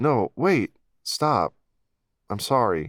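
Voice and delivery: urgent, earnest, begging pleading tone. The narrator calls after her as she staggers into a field: pleading. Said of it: "becoming halted by my pleas".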